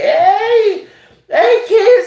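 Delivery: put-on very high, drawn-out hey in kids' presenter voice. Mocking a kids' show greeting: Sesame Street character voice. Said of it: "on Sesame Street, they start doing all the little freak shit".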